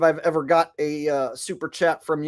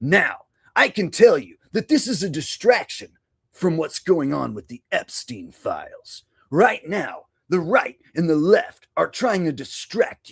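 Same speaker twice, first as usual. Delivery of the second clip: swooping, dramatic wrestling-promo style delivery. Answering a viewer's request with a wrestling-style promo: Brian Young WWE-style promo. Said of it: "impression of Brian Young doing a W W E style promo".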